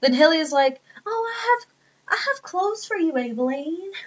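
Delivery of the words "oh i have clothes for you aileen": put-on character voice pitched much higher. Recapping a story, quoting Hilly offering clothes to Aileen, in Hilly voice. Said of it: "I hate doing the voice".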